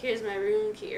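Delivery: normal talking voice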